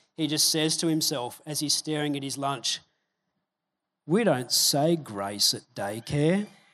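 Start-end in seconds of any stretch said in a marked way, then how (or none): 4.1-6.5 mock crestfallen, disappointed tone. Retelling a daycare educator's story about lunch, imitating Quinn's disappointed tone. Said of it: "with this tone of disappointment".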